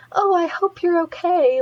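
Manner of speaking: kindly, caring tone. Explaining how they change their voice, demonstrating a higher, kinder voice. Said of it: "I do like put my voice a little bit higher and try to sound more like kind".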